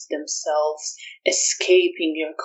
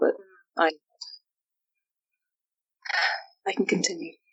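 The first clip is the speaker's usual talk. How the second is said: soft, hollow, emptied-out voice; 5 dB quieter than usual. Answering, in character, whether she is all right: hollow voice. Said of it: "My voice sounds a little hollow".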